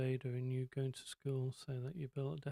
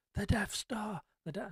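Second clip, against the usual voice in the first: mock high, full-voice, top-of-the-lungs shout; 7 semitones higher than usual. A dad retells shouting at the moon in front of his kids; retelling a full-voice shout. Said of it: "I always shout at the top of my voice".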